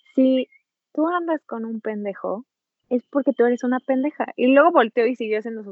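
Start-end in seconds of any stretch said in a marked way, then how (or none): 0.2-4.3 play-acted very calm, relaxed, easygoing, matter-of-fact tone. Retelling what someone said with a smile: imitating someone very calm and smiling. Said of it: "con una sonrisa en la cara, así súper tranquilo".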